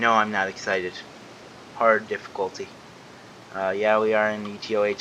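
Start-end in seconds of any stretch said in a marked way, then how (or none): none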